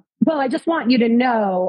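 ordinary delivery

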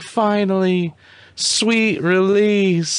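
put-on sweet, high tiny-child voice. A comedian acts out a sad character sighing with relief, doing it in a cute little kid voice. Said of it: "It sounds like a little kid".

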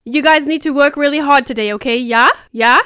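loud, put-on German accent. Talking about Dance Life with a co-host, quoting a line in a German accent. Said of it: "You sound German".

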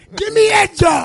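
mock excited shout, high and loud.

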